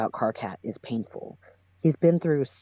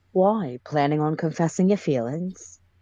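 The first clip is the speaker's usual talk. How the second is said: attempted, put-on British accent; 2 semitones higher than usual. Retrying the character's line in a british accent. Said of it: "I know how to British".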